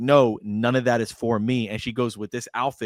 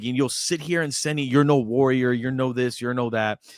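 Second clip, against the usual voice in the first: mock-upset scolding outburst. Recounting a woman scolding generals and officials, retelling her upset outburst. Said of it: "she is so upset".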